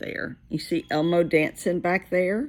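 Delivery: ordinary delivery, nothing marked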